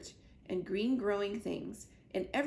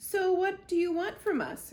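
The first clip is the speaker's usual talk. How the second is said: loud, snarling growl, very high pitched; 10 semitones higher, 5 dB louder than usual. Narrator reading a story, Fink answering the robot; growling as Fink. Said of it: "growled Fink".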